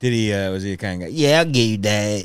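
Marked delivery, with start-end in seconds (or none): 1.1-2.3 small, impish, spooky ghoul character voice. Speaker imitates a guy who bought drugs for the other speaker, little Beetlejuice voice. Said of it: "like a little Beetlejuice kind of a voice".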